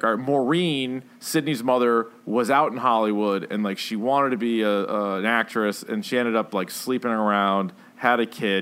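ordinary talk, nothing marked

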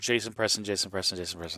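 slurred repeats, fading out. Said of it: "you were kinda slurring it a little bit there".

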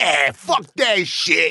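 put-on Brooklyn accent, laid on thick, drawn out. Retelling answering a bonjour in Montreal: put-on Brooklyn accent. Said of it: "I get real Brooklyn".

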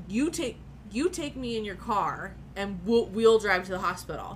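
normal talking voice

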